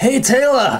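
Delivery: put-on Scottish accent, very high pitched. After naming who he'll imitate, a speaker launches into a Billy Connolly impression. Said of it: "Haggis, Billy Connolly".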